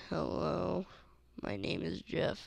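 dull, slow, lifeless, low-energy delivery. Mocking how he sounded in old videos, imitating his flat old delivery. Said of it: "I sounded like a rock in the last couple of videos. I was like".

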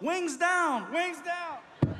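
very high, slow, drawn-out yell. Retelling a friend guiding the speaker through the metal detector: imitating Ryan yelling. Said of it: "Ryan yells out".

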